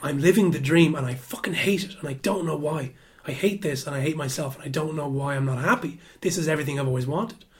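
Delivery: put-on shaking, trembling outburst. Retelling waking up one day and saying this: retelling own shaking outburst.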